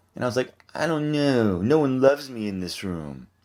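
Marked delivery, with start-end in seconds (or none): 0.7-2.5 put-on, slow, drawn-out poor-victim voice. Retelling being called on in meetings: imitating own past victim voice. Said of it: ""Why are you talking like that?"".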